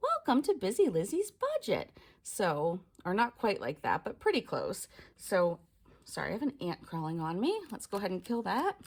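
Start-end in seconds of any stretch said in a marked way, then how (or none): 0.0-1.9 high, sing-song preschool teacher voice. Showing the voice her kids tease her for in her intro, preschool teacher voice. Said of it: "using like a teacher voice that I would use for preschool kids".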